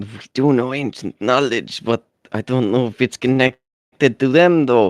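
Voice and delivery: hushed whispering. Retelling a scene, a character speaks to Annie, whispering. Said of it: "he whispers to Annie".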